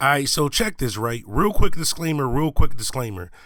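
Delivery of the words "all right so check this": normal talking voice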